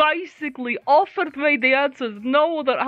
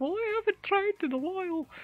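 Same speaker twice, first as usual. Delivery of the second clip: high-pitched, bad, attempted British accent. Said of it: "That's not what she sounds like, but yeah, I can't do British accent".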